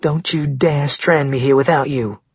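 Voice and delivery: plain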